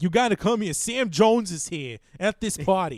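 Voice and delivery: bad put-on Boston accent, loud and high-pitched. Retelling a scene from the Ted movies, awful Ted Boston accent. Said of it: "I'm doing an awful Boston accent".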